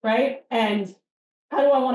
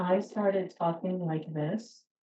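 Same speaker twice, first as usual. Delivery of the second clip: softer, softened way of talking; 3 semitones lower, 8 dB quieter than usual. Showing how it sounds if the speaker suddenly talks differently: speaking softer.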